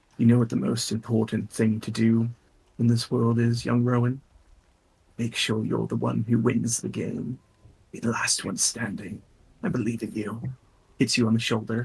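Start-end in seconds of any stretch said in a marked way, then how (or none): 0.2-10.4 hushed, half-whispered character voice. Voicing a character who leans over to a player: half-whispering in character. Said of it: "he whispers into your ear".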